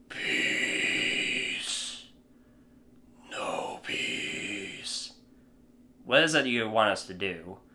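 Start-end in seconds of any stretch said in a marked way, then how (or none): 0.1-5.1 frightening, menacing alien voice, barely whispered. Retelling a scene, the speaker answers the president's question in a scary alien voice. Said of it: "That voice alone is scary as shit".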